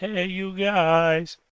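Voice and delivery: high shout, "guys" drawn out. Jumping onto the pirate ship as a first action: shouting like Sloth. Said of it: "I jump on top of the pirate ship and shout".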